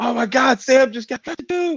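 very high, slow, drawn-out yell. Recalling when mom saw the news on the screen, retelling mom's yelling. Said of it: "My mom started yelling".

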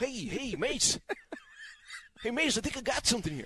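put-on very high, hushed, gossipy nine-year-old child voice. Retelling a side conversation, imitating John gossiping like a nine-year-old. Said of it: "Do the voice again".

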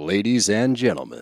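put-on grand TV promo announcer voice. Starting the show's promo while a co-host objects, tv promo announcer voice. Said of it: "What are you doing?".

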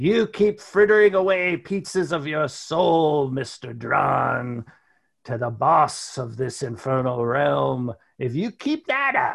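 put-on old hag character voice. The spirit Mad Maggie speaks to Mr. Drawn at his gravestone, Mad Maggie hag voice. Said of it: "You see the hag Mad Maggie".

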